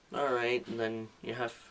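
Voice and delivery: low, soft, dead level droning lecturer monotone. Imitating a lecturer nobody could pay attention to, low monotone voice. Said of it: "such a low monotone voice like this".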